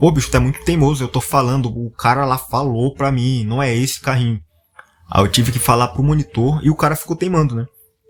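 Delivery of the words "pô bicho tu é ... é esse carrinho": plain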